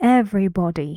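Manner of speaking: everybody, first syllable stressed. Demonstrating word stress to learners: stress on ev in everybody. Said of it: "Where's the stress?".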